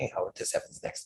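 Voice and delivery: soft, hushed whisper. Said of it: "whispers to me".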